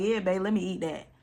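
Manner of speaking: normal talking voice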